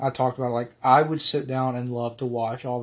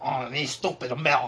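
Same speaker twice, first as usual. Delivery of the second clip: scoffing, mocking put-down tone; 5 dB quieter than usual. Imagining what French listeners would say about the hosts: imitating French listeners. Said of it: "they're probably like".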